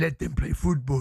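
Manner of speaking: put-on German accent, announcer-style voice. Mocking an advert he heard, quoting its line in the talkSPORT advert German accent. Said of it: "with this accent like that".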